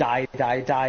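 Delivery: ordinary talk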